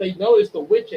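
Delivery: ordinary delivery, nothing marked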